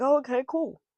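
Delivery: high, polite, fake-agreeable tone.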